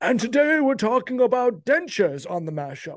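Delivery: put-on transatlantic accent. A host introduces today's topic on the show, in a transatlantic accent. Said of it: "I've established a transatlantic accent for some reason".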